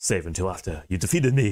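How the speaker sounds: slightly slurred put-on voice. Voicing a game character's line to Zero: slightly slurred Colonel voice. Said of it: "I'm trying to go for that".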